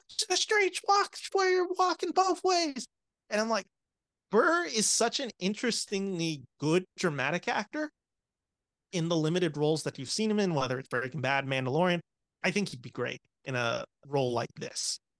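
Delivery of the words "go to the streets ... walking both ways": put-on, very high-pitched, furious, raging yell. Retelling a film scene where the actor rages at the kid: imitating Bill Burr yelling. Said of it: "he's yelling at the kid".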